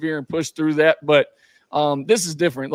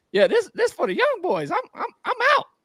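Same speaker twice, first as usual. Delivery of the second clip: put-on high-pitched voice, much higher. Retelling a man on the bench telling his coach he's done, in a high-pitched imitation. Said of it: "he talks real like high pitch".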